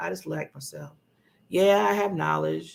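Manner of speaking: unsure, doubtful, hesitant, unconfident delivery. Contrasting confident and unconfident ways of describing yourself: unconfident tone. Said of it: "That's not confident".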